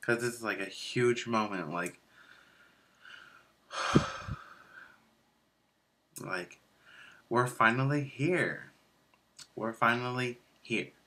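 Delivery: voice holding back tears, trying not to cry. Ending a story time video after taking hormones for the first time, holding back tears. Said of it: "I'm trying not to cry".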